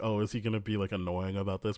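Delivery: ordinary delivery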